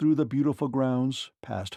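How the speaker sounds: ordinary delivery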